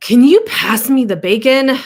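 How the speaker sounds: very loud, fed-up, frustrated, agitated tone. Acting out an emotion for a listener to guess, frustrated.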